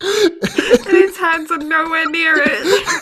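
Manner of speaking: speech through laughter.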